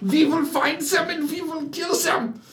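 harsh German-accented villain voice. Talking to Steve, launching into one of his Nazi impressions. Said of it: "your Nazi impressions".

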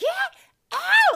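piercing, ear-splitting, shrill, very loud scream. Retelling a wedding-day commotion, Misty screams at Abe to get out; imitating Misty screaming. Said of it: "Misty is just screaming like".

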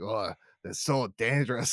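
put-on Scottish-accented voice. Speaker quoting a character in a game, in a scottish accent.

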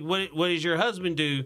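ordinary talk, nothing marked

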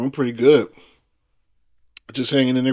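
talking through a mouthful. Guest asked how he is answers while drinking; talking with mouthful of juice. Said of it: "with a mouthful of juice".

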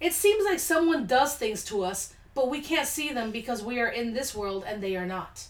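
plain

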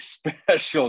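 strong, heavy stress on the word special. A host introducing today's guest, stressing the word 'special'. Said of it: "I really stress the word special".

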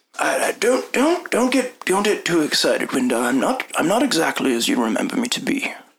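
halting, stumbling character voice. Voicing an older man greeting Windar in a doorway: voicing Aberstall. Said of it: "and so he says".

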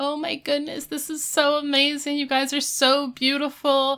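put-on high tearful bawling, gushing sobs. Retelling a scene where Topanga is bawling her eyes out: imitating someone bawling. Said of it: "Topanga's just bawling her eyes out".

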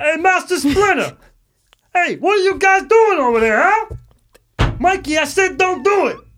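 very high, loud, shrill, put-on cartoon voice. Asked to do the Raphael voice real quick, speaker does Raphael voice. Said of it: "Do the fucking Raphael voice real quick".

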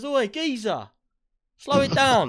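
very high, swooping, loud traffic-cop policeman voice. Imagining being pulled over by a policeman: imitating a policeman. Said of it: "He says".

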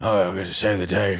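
gravelly heroic voice. Describing how an actor played Action Man, gravelly Action Man voice. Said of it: "gravelly voice".

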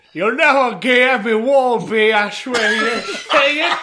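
put-on loud, mangled British villain accent. Asked to give the villain a regional flavor, voicing him in a british accent. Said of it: "a British person with a broken jaw".

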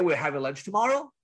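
statement rising in pitch like a question on "tomorrow". Explaining how pitch turns a statement into a question, demonstrating rising upward inflection. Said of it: "my voice inflects upward".

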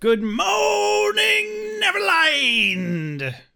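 very high pitch with morning stretched out. Greeting listeners while imitating Smee from Hook: Smee from Hook voice. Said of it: "I didn't get it growly".

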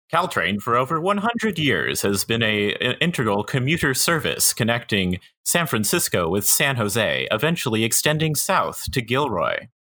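grand ad-announcer read, overly official. Explaining Caltrain to the others, the speaker uses an overly official tone. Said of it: "Should I describe it in a overly official tone?".

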